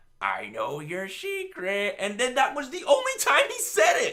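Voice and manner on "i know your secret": drawn-out sing-song, swooping up and down. Complaining that a plot hint went nowhere: imitating Pennywise. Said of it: "Pennywise was like".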